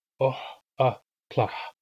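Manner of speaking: very slow "oh, a, tlah", pausing between each syllable. A speaker demonstrating pronunciation to learners, slowed down syllable by syllable. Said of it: "slow it down".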